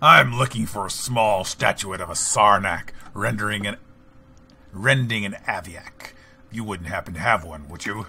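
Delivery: loud, nasty, mean monster creature voice. Gamer voicing their character to an antiquities dealer, mean Sarnak voice. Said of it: "That's my mean Sarnak voice".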